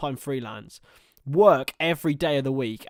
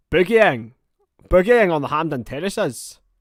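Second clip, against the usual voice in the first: loud, terrible put-on Scottish accent; 3 semitones higher, 8 dB louder than usual. A streamer tries a scottish accent for the chat: terrible scottish accent. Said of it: "That's my Scottish accent".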